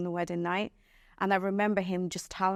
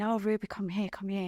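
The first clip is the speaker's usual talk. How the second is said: put-on whisper. Retelling how a mother called the speaker over, imitating someone whispering. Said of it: "whispering to me".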